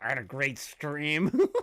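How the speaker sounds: mock-angry delivery. Mocking a streamer, quoting him after his stream: mock-angry streamer imitation. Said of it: "He's like".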